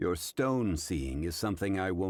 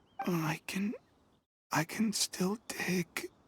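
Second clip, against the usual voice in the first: whispered mutter, pitched very high; 13 semitones higher than usual. Lying collapsed from exhaustion, saying he can still dig: whispering. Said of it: "Sounds like he's whispering something".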